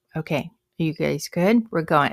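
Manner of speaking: hushed whisper. Teacher checking in with a few students before they start, whispering. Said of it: "And you're just whispering".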